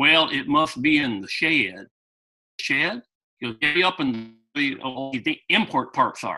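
poorly done put-on Southern accent. Retelling what a man said about the bumper, bad Southern accent. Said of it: "I can't do a good Southern accent".

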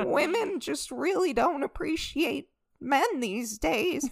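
mock, high, near-tearful voice, on the verge of tears. Doing impressions with others, speak while imitating someone on the verge of tears. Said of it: "He sounds like he's on the verge of tears".

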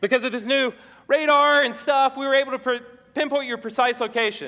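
announcement voice, read out as through a megaphone. Playing a Coast Guard officer reading into a megaphone, in a megaphone voice. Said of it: "This is me reading into a megaphone".

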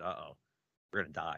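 normal talking voice

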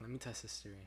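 normal talking voice

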